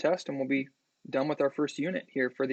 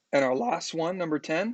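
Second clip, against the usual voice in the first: wobbling voice right at the edge of cracking; 2 semitones higher than usual. Working through math problems aloud, reaching the last one: almost a voice crack. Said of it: "almost a voice crack there".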